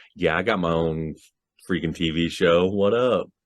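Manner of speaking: plain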